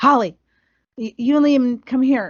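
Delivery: put-on urgent voice. Retelling her husband calling to her from the beach, retelling an urgent call. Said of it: "like in a really urgent voice".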